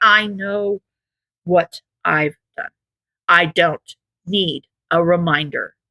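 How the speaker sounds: slow, deliberate, through gritted teeth. Being scolded, he interrupts to answer quietly, through gritted teeth. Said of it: "he interrupted quietly through gritted teeth".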